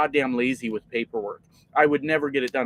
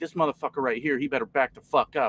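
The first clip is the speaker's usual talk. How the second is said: put-on whisper, quieter; 4 dB quieter than usual. Retelling what a wife whispered about a stranger: imitating someone whispering. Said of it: "whispering to me".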